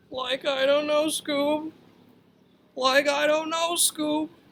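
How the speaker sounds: high cartoony sidekick voice. Explaining a nickname by quoting the cartoon character, Shaggy from Scooby Doo voice. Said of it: "like Shaggy from Scooby Doo would say".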